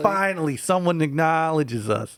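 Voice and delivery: put-on Albany accent. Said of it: "I'm giving them that accent".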